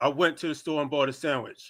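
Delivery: most masculine put-on voice, deep and soft. Prompted to say a simple sentence in their most masculine voice. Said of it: "in your most masculine voice".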